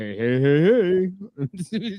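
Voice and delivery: very slow, sing-song cartoonish "hey hey", each "hey" drawn out, swooping. Answering the other speaker with a greeting: Fat Albert voice. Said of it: "that's like Fat, Fat Albert".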